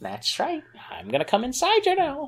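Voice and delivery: put-on very high swooping granny voice. Acting out a bedroom scene as a grandma, in an old lady voice. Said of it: "This is my old lady voice".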